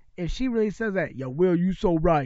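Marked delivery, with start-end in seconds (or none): 1.2-2.3 exaggerated, very deep put-on bass voice. Joking about what she might say: very deep put-on voice. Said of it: "in a deep-ass voice".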